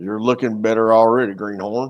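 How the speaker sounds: put-on Southern accent. Playing a farming game, the speaker voices a character in a Southern accent. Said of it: "a Southern accent".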